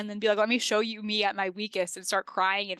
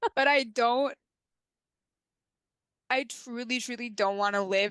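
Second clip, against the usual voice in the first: voice on the edge of tears, tearful; 2 semitones higher than usual. Talking with another speaker about getting emotional this episode, tearful. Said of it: "I'm gonna cry again".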